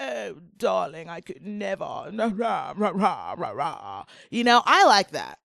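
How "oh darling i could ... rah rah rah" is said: put-on British accent trailing off into babble. Retelling how a reality show guest talks: imitating Mark Francis's British accent. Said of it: "I love how he's like".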